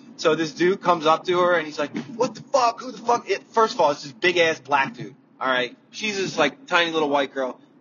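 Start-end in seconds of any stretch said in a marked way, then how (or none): 2.1-3.3 put-on furious, pissed-off outburst, pitched high. Retelling how a guy came up to a woman and screamed at her, imitating a pissed-off guy. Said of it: "he's pissed off".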